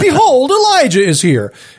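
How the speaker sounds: high, sarcastic, indignant tone. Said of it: "I'm picturing this being sort of sarcastic".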